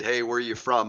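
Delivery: plain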